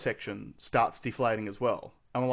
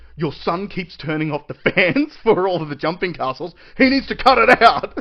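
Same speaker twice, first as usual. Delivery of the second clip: mock furious, very loud angry voice, rising pitch; 6 semitones higher, 11 dB louder than usual. Retelling how a staff member stormed up complaining: imitating an angry staff member. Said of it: "one of the staff members storming up behind him going".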